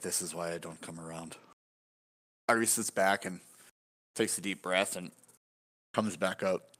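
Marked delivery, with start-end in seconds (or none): 0.0-1.4 put-on mumble, lower and quieter. Retelling what one man muttered while everyone waited on him, retelling a mumble. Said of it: "Arturi just like mumbles".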